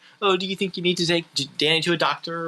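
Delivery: mimicked mocking tone. Retelling a film scene where a character mocks her: imitating someone mocking. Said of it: "kinda mocking her".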